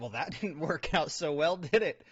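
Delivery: loud words spoken through put-on laughter. Acting out a couple joking about a failed dinner: imitating someone laughing. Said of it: "while she's laughing about this".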